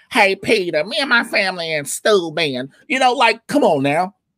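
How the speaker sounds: slow, easy, drawling cartoon voice. Discussing how a cartoon character sounds, doing a Cleveland Brown voice.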